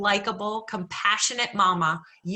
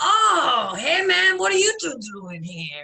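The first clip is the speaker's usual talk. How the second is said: high, swooping street guy character voice; 7 semitones higher, 4 dB louder than usual. Retelling what a neighborhood addict said in the ER, imitating a Hell's Kitchen Puerto Rican addict. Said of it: "our Puerto Rican sees me".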